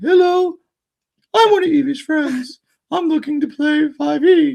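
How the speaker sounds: very high puppet-style voice. Mocking how a friend was imitated: mock Muppet voice as a friend. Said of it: "none of them talk like a Muppet".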